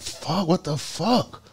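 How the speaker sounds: high, slow, drawn-out stunned disbelief.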